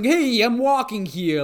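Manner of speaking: imitated New York accent. Speaker imitating a man who sounds like a New Yorker, New Yorker accent. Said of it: "he basically sounds like a New Yorker".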